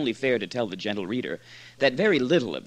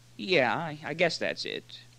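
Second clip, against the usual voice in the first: hesitant, wary, cautious, slow; 4 semitones higher, 4 dB quieter than usual. Asked by Moore to confirm his meaning, [name] hesitates, then answers: cautious reply. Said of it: "replied cautiously".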